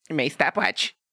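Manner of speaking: high, mocking nerdy whine.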